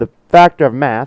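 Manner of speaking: shrill, very loud screaming. Explaining that cleaning together goes faster: screaming. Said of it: "I just screamed in your ear".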